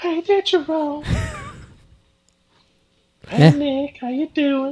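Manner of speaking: high, sing-song, swooping character voice. Asked to get into character briefly, doing the Whitney Ann character voice. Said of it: "get into character real quick".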